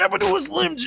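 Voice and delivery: very high-pitched shouting wrestler voice.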